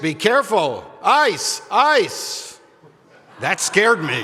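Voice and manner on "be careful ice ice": very slow, high, drawn-out calling voice. Retelling a man at the trail's start warning an elderly walker: booming voice. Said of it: "called out in a booming voice".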